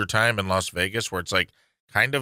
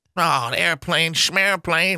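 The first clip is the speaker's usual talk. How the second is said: put-on old-timey voice, higher pitch; 8 semitones higher, 3 dB louder than usual. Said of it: "he's amazed by everything modern still".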